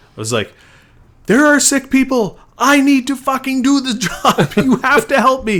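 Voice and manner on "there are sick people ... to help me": put-on shrill, very high, loud yelling. Retelling a phone call to an unhelpful support person: imitating own past screaming. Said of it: "screaming at this person".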